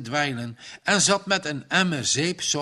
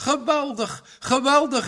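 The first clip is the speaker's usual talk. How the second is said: gleeful, high, delighted cry; 10 semitones higher than usual. A man slaps his knees with pleasure and exclaims with delight. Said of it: "riep hij uit".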